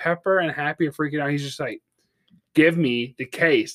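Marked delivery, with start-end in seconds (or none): 2.5-3.7 mock mildly irritated, totally nonchalant, slow. Retelling a movie scene while others freak out: imitating Tony, annoyed and nonchalant. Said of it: "annoyed at this minor inconvenience".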